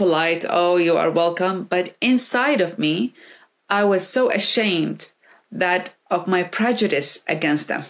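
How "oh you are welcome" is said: ordinary talk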